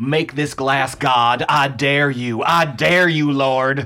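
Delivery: all-out loud screaming. Teasing the other speaker about what they screamed outside their barn, imitating someone screaming at God.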